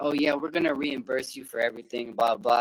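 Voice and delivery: ordinary talk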